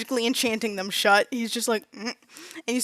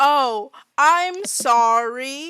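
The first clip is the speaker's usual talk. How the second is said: deliberately slowed, very slow, drawn-out delivery; 2 semitones higher than usual. Retelling how she talks to someone not from around here, really loud and really slow. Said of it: "she gets like immediately really loud and really slow".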